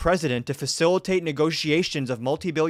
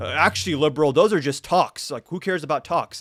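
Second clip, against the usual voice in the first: plain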